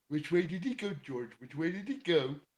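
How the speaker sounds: high, put-on cartoon monster voice. Doing a Bugs Bunny cartoon impression, Abominable Snowman voice. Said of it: "in the impression of the abominable snowman from Bugs Bunny".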